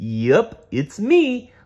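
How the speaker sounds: chuckling and laughing, very high-voiced. A narrator reading a story voices Barney answering Lori, laughing as Barney. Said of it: "laughed Barney".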